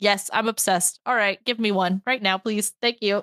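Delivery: ordinary delivery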